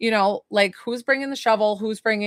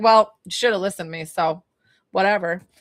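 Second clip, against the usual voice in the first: full-on sassy, attitude-laden tone; 2 semitones lower than usual. Voicing a spirit's reply during a reading: imitating someone being sassy. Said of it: "so she feels really sassy".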